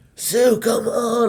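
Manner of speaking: put-on yell. Retelling how Brian called across the park: imitating someone yelling across. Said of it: "like, yelling across".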